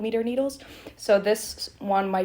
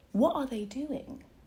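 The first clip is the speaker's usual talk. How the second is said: gentle, breathy British accent; 5 semitones higher, 6 dB quieter than usual. Speaker shows how they talked while visiting a cousin in Oxford, British accent. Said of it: "Back to the American accent".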